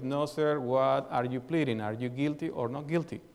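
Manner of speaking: ordinary talk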